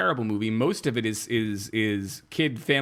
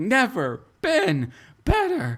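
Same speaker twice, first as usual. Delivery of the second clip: faked, very high, swooping over-the-top scream; 11 semitones higher, 3 dB louder than usual. Retelling a movie scene, imitating Kelly Preston screaming. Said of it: "she is screaming".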